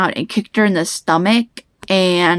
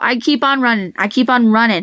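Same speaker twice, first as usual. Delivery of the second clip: ordinary talk, nothing marked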